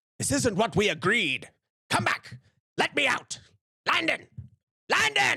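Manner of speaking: very high, swooping shouts that keep rising. Voicing a lord yelling after landon as he walks out: yelling. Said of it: "Yelling at him as he goes out".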